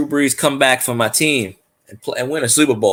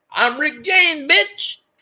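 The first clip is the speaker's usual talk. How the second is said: said way up high in pitch. Doing a famous quote in his best Dave Chappelle voice. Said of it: "In my best Dave Chappelle voice".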